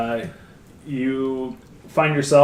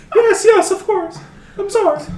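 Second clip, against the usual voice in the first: put-on very high, shrill, sobbing, terrified old lady weeping; 8 dB louder than usual. Voicing a terrified woman held by a player's character, screaming and weeping in terror. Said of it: "just starts screaming and weeping".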